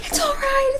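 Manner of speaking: high, loud, reassuring mock yell.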